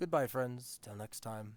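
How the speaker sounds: low, bored, indifferent, uninterested voice. Voicing a bartender saying farewell to the players: low hushed uninterested tone. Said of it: "in a very low, hushed, uninterested tone almost".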